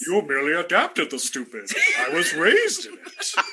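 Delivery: loud, swooping, booming put-on character voice. Describing how he would answer someone ranting at him: Bane voice. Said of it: "pull fucking Bane voice on him".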